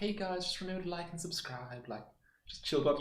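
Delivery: gentle, caring, soft high voice. Showing the new child-friendly YouTube style, in a soft caring voice. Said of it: "have that like you know soft like caring voice".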